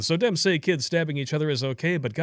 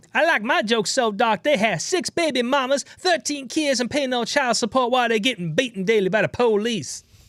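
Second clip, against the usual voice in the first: put-on high, wild woman's voice; 8 semitones higher than usual.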